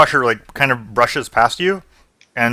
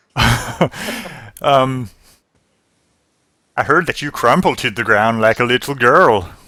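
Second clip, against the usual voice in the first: put-on, vaguely Scottish accent, laid on loosely. The innkeeper behind the bar taunts a patron, in a put-on, vaguely scottish accent. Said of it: "Yeah, she's like behind the bar, / She says, / Arius wants to get the innkeeper's attention, / I want to say Scottish. All right. She says, rumor in this town spreads quickly. No, that wasn't it. No".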